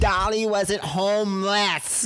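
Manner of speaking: put-on very high, shrill, unhinged, deranged screeching. Retelling a street argument outside a concert: imitating Liz screaming. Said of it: "And she kept screaming it".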